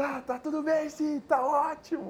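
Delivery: very high, slow, fake cheerful voice.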